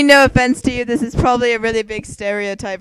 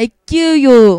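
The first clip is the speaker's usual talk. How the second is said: Transylvanian-accented delivery; 7 dB louder than usual. Asked to say the line, deliver it in a Transylvanian accent. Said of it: "In Transylvanian".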